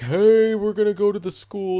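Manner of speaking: loud, high-pitched calling out.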